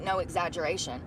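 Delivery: normal talking voice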